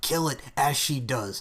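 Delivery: ordinary delivery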